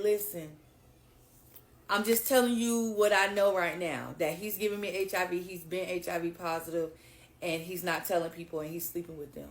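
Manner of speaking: ordinary talk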